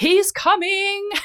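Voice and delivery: very high, loud, sudden proclaiming voice. Retelling her labour, the speaker re-enacts sitting bolt upright: retold proclamation. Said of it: "sat bolt upright and proclaimed".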